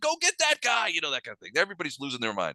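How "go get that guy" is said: shrill shout, pitched very high. Voicing the guards at the bottom of the stairs: yelling in character. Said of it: "the guys in the down in the bottom are yelling".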